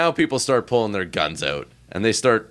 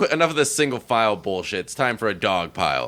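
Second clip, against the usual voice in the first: plain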